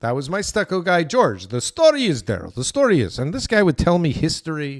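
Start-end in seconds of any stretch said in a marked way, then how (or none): 1.5-3.2 put-on Eastern European accent on English. Recalling a former stucco worker, quoting him in an Eastern European accent. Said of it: "let's say he's some kind of Eastern European".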